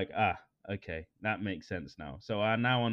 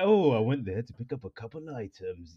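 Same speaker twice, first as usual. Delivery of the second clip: secretive, cloak-and-dagger, spy-like delivery. Repeating own earlier line while laughing at it: mock spy-like secretive tone. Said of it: "like I'm a spy".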